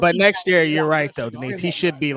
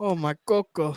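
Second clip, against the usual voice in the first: put-on Spanish accent; 3 semitones higher, 4 dB quieter than usual. Joking about a word while others laugh: put-on spanish voice. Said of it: "That's my Spanish voice".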